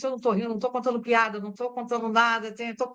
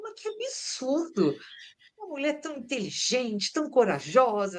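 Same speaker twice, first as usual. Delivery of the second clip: put-on indignant outrage with swooping pitch. Retelling her mother's indignant reaction while she cried, retelling mom's indignation. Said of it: "e ela assim, indignada".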